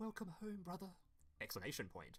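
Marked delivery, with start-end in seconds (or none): 0.0-0.9 exaggerated, soft, high little-sister voice. Describing a favourite card, Sis Hunter, in extremely little sister voice. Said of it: "In extremely little sister voice".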